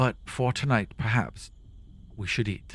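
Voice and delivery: soft, breathy, sighing delivery. Narrating a scene as Elora after everyone nods, sighing. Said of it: "Elora kind of sighs".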